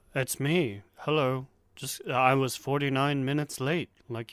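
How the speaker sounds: soft put-on British accent. Doing an impression of someone while chatting, a quiet British impression. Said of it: "It's just quiet and British".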